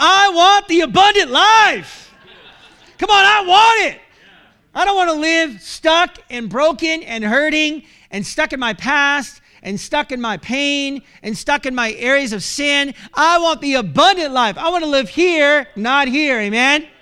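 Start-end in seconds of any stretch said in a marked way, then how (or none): 0.0-14.6 rousing, fervent, enthusiastic preacher-like tone, "life" drawn out. Showing the listeners how to say the line after weak attempts: enthusiastic declaration. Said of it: "I'll say it for you".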